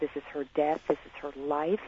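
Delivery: ordinary talk, nothing marked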